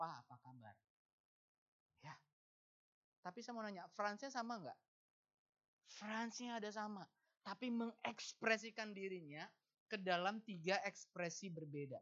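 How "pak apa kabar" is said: very low, soft, respectful and courteous tone. Greeting one's father respectfully rather than casually: polite, lowered tone. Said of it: "lebih santun, lebih sopan, turunkan nada bicara".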